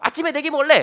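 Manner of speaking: high, loud, whining monkey tantrum voice. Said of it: "막 이러면서 떼를 쓰는 거예요".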